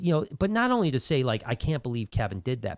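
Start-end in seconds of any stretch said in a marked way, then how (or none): none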